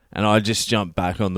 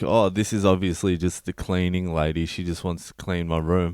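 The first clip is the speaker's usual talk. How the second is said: ordinary talk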